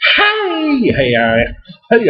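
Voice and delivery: each hey very high, swooping and drawn out. Praising a favorite beer, slipping briefly into a Harry Caray voice. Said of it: "I went into Harry Carey voice".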